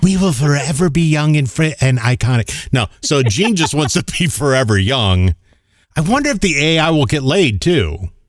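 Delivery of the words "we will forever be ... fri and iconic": happy, pleased, grand proclaiming delivery. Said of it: "[name] sounds like, uh, [name]".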